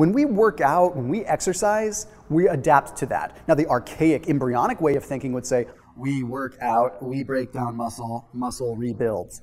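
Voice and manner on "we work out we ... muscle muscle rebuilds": low, flat, mechanical robotic voice. Speaker voicing the old way of thinking about exercise, in a robot voice. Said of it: "I shouldn't do that in a robot voice".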